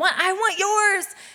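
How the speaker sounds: play-acted high, garbled screaming, barely understandable. Retelling a daughter wanting more fruit snacks: imitating Selah screaming. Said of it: "Selah's screaming".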